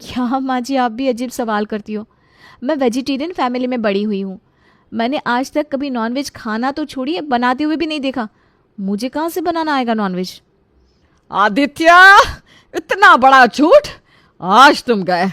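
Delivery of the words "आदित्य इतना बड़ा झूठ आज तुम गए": very loud, slow, drawn-out furious shout. A mother confronts her son: shouting. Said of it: "इतनी जोर से क्यों चिल्ला रही हो?".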